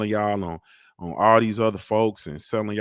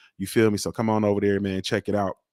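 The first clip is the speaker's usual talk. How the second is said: usual speaking voice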